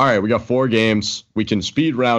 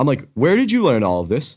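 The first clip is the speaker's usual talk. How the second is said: plain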